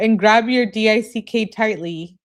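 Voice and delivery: ordinary talk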